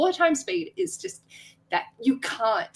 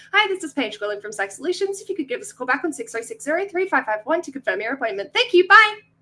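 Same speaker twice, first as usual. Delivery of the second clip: rattled-off, breakneck fast, rapid-fire with no breaks; 3 semitones higher than usual. Demonstrating her ten-second work voicemail message, very fast talking. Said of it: "we speak at inhumane speed".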